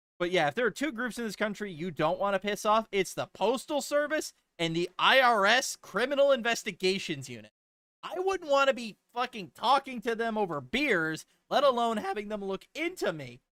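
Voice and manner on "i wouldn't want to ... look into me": voice cracking, breaking on a word. Speaker talking to listeners, voice cracking. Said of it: "my voice even cracked".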